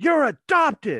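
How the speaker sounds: loud, sudden, blurted-out scream. Retelling what a son suddenly screamed during a match: imitating a scream. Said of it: "all of a sudden he screams out".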